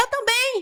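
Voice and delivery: shrill called-out shout, pitched very high, sounding distant. Retelling how the mother shouted from another room: imitating her mother shouting. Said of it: "ela grita".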